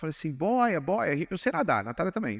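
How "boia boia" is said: put-on urgent shout, calling out. Retelling shouting to a wife drifting away at sea: retelling a shout. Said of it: "eu gritei pra Natália".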